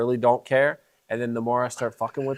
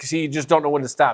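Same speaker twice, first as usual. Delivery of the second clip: ordinary talk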